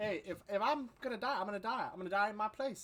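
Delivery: put-on Florida accent. Refusing to leave after being told to go: Florida accent. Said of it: "like with the accent that you're doing".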